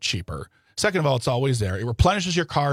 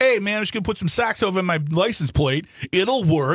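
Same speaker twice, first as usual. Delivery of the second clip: put-on New Jersey accent, pitched up; 6 semitones higher than usual. Joking about a man covering his license plate, voicing his thoughts: put-on New Jersey accent. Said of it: "and I'll do the accent".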